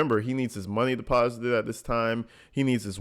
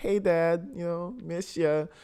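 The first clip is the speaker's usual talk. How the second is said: put-on kid-like boyish voice, pitched up; 7 semitones higher than usual. Imitating a caller greeting his father on the phone: imitating a boyish tone. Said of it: "the boyish tone in his voice".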